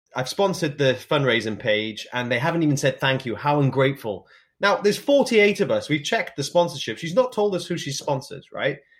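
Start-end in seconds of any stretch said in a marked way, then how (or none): none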